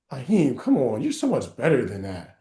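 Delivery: slow, let-down, disappointed, pleading fatherly tone. Retelling a dropped pass, imitating Matt sounding disappointed. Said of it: "disappointment as opposed to anger rage".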